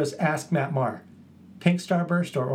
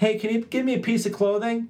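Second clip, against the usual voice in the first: mock shouting, high-pitched calling-out yell; 8 semitones higher than usual. Telling of her sister's Mad Libs game, repeating what she yelled: retelling a yell. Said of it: "she yells to someone".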